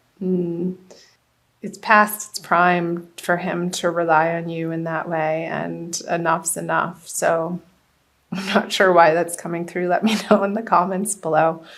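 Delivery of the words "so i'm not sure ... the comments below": talking through laughter. Giving a reading and asking viewers to comment: laughing while talking. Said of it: "Sorry I'm laughing".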